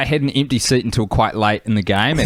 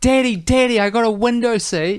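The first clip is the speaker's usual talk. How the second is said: put-on very high-pitched little-boy voice, shouting; 11 semitones higher than usual. Retelling how a kid on the plane yelled out: imitating a kid yelling. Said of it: "yelled out".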